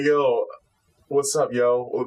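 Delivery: very slow, drawn-out, slangy street drawl. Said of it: "he kinda talks like".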